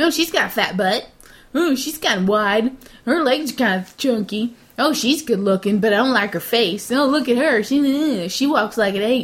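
put-on nine-year-old boy voice, one word stretched. Speaker recounting boys judging girls this weekend, impression of a 9-year-old boy. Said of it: "Good impression of a 9-year-old boy".

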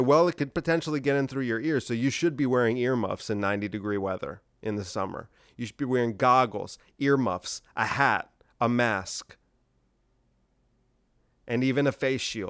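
ordinary talk

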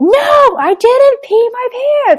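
put-on very high, slow shouted child yell. Retelling a child's loud denial to a question: imitating a child yelling. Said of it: "yells it".

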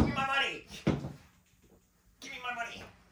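very high-pitched cartoon character voice. Joking along after another speaker names Mister Krabs: Mister Krabs voice. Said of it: "Mister Krabs".

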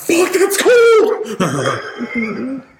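high, drawn-out, shocked scream. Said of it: "I scream out".

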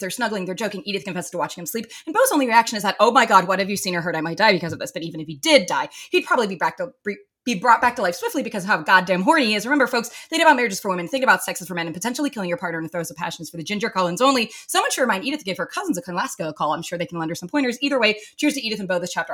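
very fast, rushed, rattled-off delivery.

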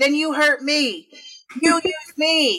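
high, slow, drawn-out yell. Imitating a ghost hunter on a show provoking a ghost: imitating Zak Bagans yelling. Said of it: "you're yelling at those people".

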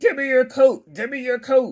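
growling, said twice. Retelling a movie scene about a stranger who attacks: imitating a growling man. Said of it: "just comes out of nowhere growling".

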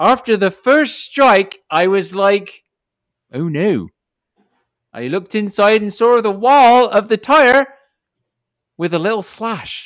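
high-pitched West Country accent. Going back to reading the story aloud, in a West Country accent. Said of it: "back to the West Country accent".

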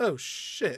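tossed off with zero energy. Imitating an actor's uninspired movie line: imitating Michael Caine's uninspired "oh shit". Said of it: "he's just so, like, uninspired".

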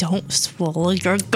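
mock-threatening, menacing put-on voice. Recalling how mom always warned her: mock-threatening warning. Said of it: "in a very threatening voice".

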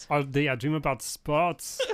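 mock, put-on German accent. Asked by another speaker to repeat the line in a German accent. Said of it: "can you do it in a German accent?".

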